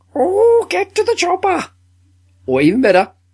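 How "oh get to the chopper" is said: put-on very high, squeaky, shrill old-lady voice. Proposing a redub of blockbuster action scenes, in the Monty Python Pepper Pot Lady voice. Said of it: "the Pepper Pot Lady voice used in Monty Python".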